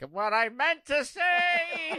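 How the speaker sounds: put-on cartoon villain voice. Imitating the caller's Skeletor bit: imitating Skeletor. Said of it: "I love hearing Skeletor just like".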